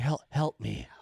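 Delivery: put-on pleading tone. Imitating someone in a video as a hostage begging for help: imitating a hostage pleading for help. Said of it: "looks at the camera like it's, like, a hostage video. He's like".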